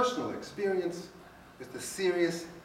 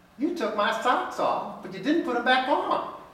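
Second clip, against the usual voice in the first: put-on high, loud, screechy little old lady voice; 9 semitones higher, 6 dB louder than usual. A doctor retells his elderly patient's complaint, in a high-pitched screechy old-lady voice. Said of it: "this high-pitched, screechy voice".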